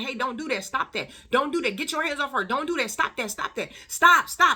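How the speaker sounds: high screaming. Retelling shouting at a man to stop while others stood by: retelling own screaming. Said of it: "standing up, screaming".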